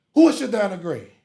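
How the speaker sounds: very loud, high-pitched yelling. Retelling how a man with a bible questioned him: imitating a man yelling. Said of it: "Then he yelled at me".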